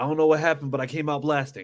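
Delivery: plain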